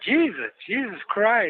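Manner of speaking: a man's voice. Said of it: "something happened, like".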